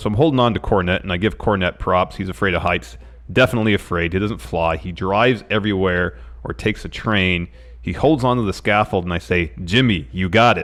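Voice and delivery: ordinary talk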